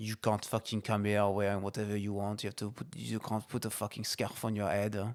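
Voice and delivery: English spoken with a put-on French accent. Asked to say it in a French accent, the speaker repeats it in a French accent. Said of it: "Say it in a French accent".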